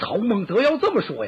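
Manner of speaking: high, loud, hearty exclamation mixed with laughter.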